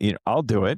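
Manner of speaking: put-on sheepish tone. Retelling volunteering when no one would role play, mock-sheepish reply. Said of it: "So I kind of sheepishly go".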